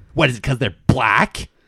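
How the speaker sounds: put-on, very nasty, bitchy tone. Retelling what a texting lady said to the speaker, in a mock-bitchy tone. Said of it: "says in the bitchiest tone you possibly can".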